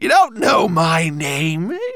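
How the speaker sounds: shrill, high, screeching monster voice. Narrator voicing the monster, screeching monster voice. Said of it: "it screeched".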